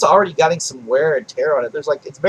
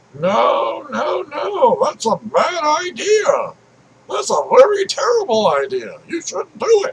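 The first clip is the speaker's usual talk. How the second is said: put-on old man voice, pitched higher; 13 semitones higher than usual. Talking about gamers who want realism, breaking into a random old man voice. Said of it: "it kind of sounds like an old man".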